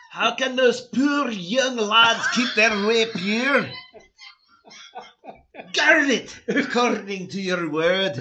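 thick Scottish accent, very loud, very high pitch. Rereading the passage aloud at the other speaker's suggestion, in a heavy Scottish accent. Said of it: "reread this in like a heavy Scottish accent".

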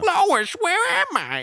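awful, very high, loud, drawn-out voice. Retelling a dubbed funny-moments video: imitating a terrible Peter Griffin impression. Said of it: "it's a terrible impression".

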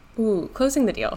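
normal talking voice

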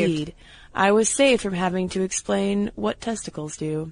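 ordinary delivery

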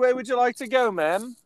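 very high, loud put-on English accent. Acting as her driver, asking the passenger where to go; english accent. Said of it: "in a whole uh, English accent".

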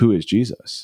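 dead serious, earnest, deadpan delivery. Retelling a barista's question to a priest: imitating a dead serious question. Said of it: "dead serious".

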